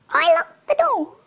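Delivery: very high, feeble, tiny, weedy little voice. Reading the story, the narrator answers as his dad turns furious: weedy little voice. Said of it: "In a weedy little voice".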